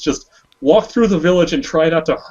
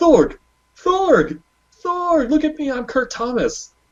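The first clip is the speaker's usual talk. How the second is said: mock, very high, eager, insistent calling out; 11 semitones higher than usual. Retelling a fan greeting Thorg for a handshake: Kurt Thomas calling out. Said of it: "he calls out".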